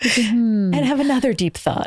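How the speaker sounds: very breathy, slightly high voice with many pauses. Host joking about a new series with a co-host, breathy voice. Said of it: "Like your voice".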